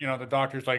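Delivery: ordinary delivery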